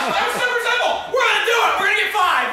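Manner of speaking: excited, high, loud triumphant cheering shout.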